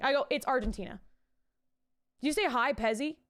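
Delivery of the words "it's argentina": very calm, imitated calmest tone of voice. Retelling answering a puzzle the others were stumped on: imitating own calmest voice. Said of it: "in the calmest voice I, I know".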